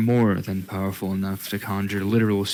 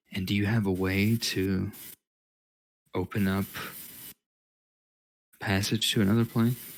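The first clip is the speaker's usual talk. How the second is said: voice lowered, tone dropped right down; 4 dB quieter than usual. Narrating a scene, voicing a character who moves away and asks, lowered tone. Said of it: "he lowers his tone and says".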